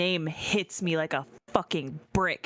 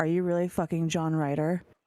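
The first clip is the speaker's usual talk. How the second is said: put-on whispering. Recapping a scene where she pulls him close: retelling her whisper. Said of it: "And she whispers to him".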